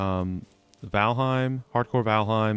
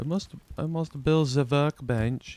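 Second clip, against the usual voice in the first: poor, fake German accent, slow and high; 5 semitones higher than usual. Crafting a workbench in a game, in a bad German accent. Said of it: "don't know why I went German there".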